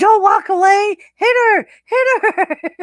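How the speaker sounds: acted-out, very high, drawn-out screaming. Recounting someone watching wrestling, imitating her screaming and yelling. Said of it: "her screaming and yelling".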